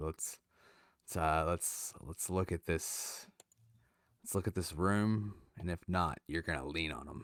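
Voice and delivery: low mutter under the breath. Walking away with a companion, speaker says a plan muttered under breath. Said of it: "I'm gonna kind of mutter um, under my breath".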